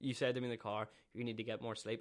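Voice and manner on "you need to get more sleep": ordinary talk, nothing marked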